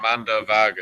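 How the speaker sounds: name said with Pakistani pronunciation and accent. Asked to say a name in his normal voice, with a Pakistani accent. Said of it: "honest Pakistani".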